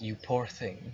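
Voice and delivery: gentle, motherly female voice. Voicing a voice on the wind speaking to a dreamer: gentle, motherly female voice. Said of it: "very gentle, very motherly".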